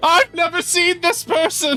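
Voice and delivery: very high, loud, flustered, panicked voice. Voicing a tavern keeper denying a customer in front of regulars: panicked denial. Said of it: "she's panicked in front of the regulars".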